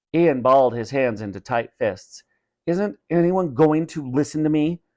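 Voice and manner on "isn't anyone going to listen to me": through gritted teeth, higher pitch. Ian, scolded over a family contest, speaks through gritted teeth. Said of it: "he said through gritted teeth".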